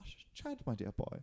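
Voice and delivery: put-on fond British-accented voice. Trying again at a friend's British-accent impression: British Jaron impression. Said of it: "I can't do it".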